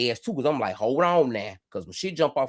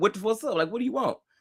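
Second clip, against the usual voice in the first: put-on giggly, giggling voice, pitched way up; 10 semitones higher than usual. Retelling how they answered a stranger at a truck stop, imitating own giggling question. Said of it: "like, giggle, like".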